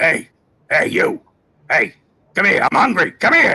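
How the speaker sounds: hungry creature voice. Speaker showing another way to voice the shark: hungry shark voice. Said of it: "or you could go another way".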